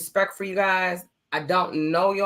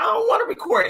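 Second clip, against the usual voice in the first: high, tearful, weepy crying whine, acted. Retelling struggling to record early episodes, imitating own past crying. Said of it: "I'd be crying like".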